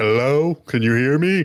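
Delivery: very loud, high-pitched, booming call. As Zeke, calling to the one tied to his tentacle, way too loud. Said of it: "says way too loudly".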